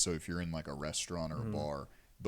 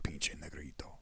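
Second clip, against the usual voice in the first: put-on muttering under breath, quieter; 2 semitones lower, 5 dB quieter than usual. Retelling how an uncle muttered a remark: imitating someone muttering under breath. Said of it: "you hear him mutter under his breath".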